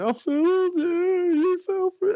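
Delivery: very high, drawn-out sobbing words. Retelling a scene where a character rides off: imitating someone crying. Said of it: "he rides off crying, going".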